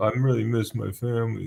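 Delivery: weepy, tearful crying-while-talking delivery. Retelling an interview on Sixty Minutes: imitating someone crying. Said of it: "crying when he's thinking".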